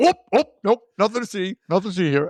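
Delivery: high, joking character voice. Retelling the mirror joke as Boris: imitating Boris. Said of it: "and then he's like".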